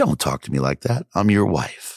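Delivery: put-on cool, composed, perfectly calm. Retelling the wife's reply after the outburst: imitating wife's calm reply. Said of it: "she looks at me just calm as could be".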